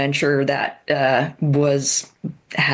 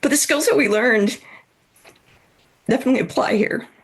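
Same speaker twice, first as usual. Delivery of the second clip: slightly emotional, higher pitch; 9 semitones higher than usual. Talking about going through a health issue, getting a little emotional. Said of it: "I'm getting a little emotional".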